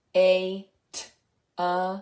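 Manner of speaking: robot voice with choppy, separated sounds. Parent playing a sound-guessing game with a child; robot voice. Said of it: "Now I'm going to speak like a robot".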